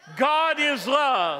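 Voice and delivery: booming loud voice. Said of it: "We're gonna say it really loud".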